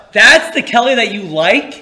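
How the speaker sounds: loud screaming. Retelling his mom's outburst when a classmate passed, imitating her screaming out. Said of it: "my mom screams out".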